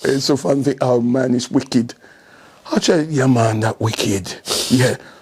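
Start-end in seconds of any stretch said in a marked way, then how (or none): 3.0-4.3 put-on, low-pitched Jamaican accent. Retelling saying Jamaican words, in a Jamaican accent. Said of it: "try my Jamaican accent".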